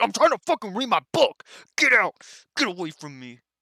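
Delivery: loud, high-pitched, irritated and annoyed. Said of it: "And Kat's like".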